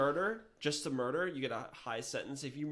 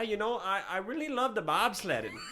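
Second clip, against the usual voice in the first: loud, high, put-on fake Canadian accent; 6 semitones higher, 5 dB louder than usual. Answering a request to say bobsled: put-on Canadian accent. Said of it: "in a Canadian accent?".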